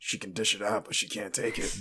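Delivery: soft, quiet whispered aside under the breath. Voicing a character whispering to a companion about another: whisper. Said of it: "Scratch turns to Barfus and whispers".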